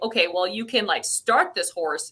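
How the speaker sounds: usual speaking voice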